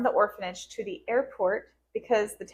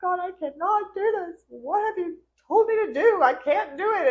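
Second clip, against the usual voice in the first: very high, slow, desperate, tearful sobbing voice; 9 semitones higher, 4 dB louder than usual. Speaker retells crying on the floor holding a baby, praying to God; retelling a tearful plea. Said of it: "And I'm just crying and crying".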